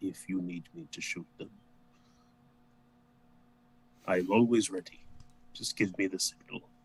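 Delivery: hushed, soft, secretive half-whisper. Half-whispering to Rufus so only he can hear: half-whispering in character. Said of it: "I whisper so that only he can hear me".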